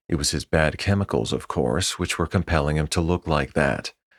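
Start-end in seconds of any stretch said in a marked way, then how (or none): none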